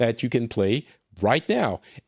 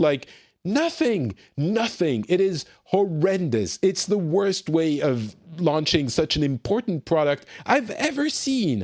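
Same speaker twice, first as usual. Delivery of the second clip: exasperated, fed-up, openly frustrated ranting tone; 4 semitones higher than usual. Criticizing how a company launched an important product, frustrated. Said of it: "you sense some frustration in my voice".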